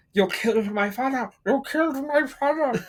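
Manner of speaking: bad, very high, mushy, muffled Spanish-Russian accent. Mocking her bad accent in a film line, muffled bad Spanish-Russian accent. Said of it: "She sounds like she's got a mouthful of cotton balls".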